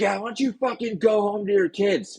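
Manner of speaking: very high, sneering, mocking taunt. Retelling how younger players talk trash at older players: imitating mocking trash talk. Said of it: "a making fun of us".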